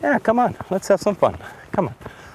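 gentle, soft, rhythmical sing-song. The speaker talks to her horse: soft voice. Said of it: "using a soft voice".

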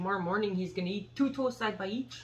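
put-on Québécois-style French Canadian accent. Joking about Canadian accents with another speaker, the speaker switches into a French Canadian accent. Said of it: "That's not Canadian, that's French".

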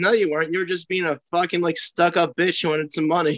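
plain

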